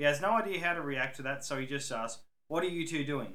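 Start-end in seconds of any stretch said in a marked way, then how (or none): 2.5-3.4 stern, strict tone. Reading a story, a guard questions two drunk men: stern. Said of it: "in a stern manner".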